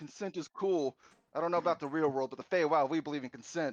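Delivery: genuinely furious yelling, loud and high-pitched. Puck speaks up during a role-play game scene, yelling angrily. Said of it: "I am yelling this because Puck's j- legitimately angry".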